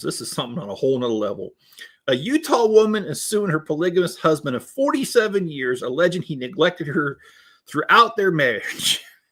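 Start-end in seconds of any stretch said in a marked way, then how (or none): 2.1-9.0 reading through barely held laughter, pitched up. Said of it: "I can't do this".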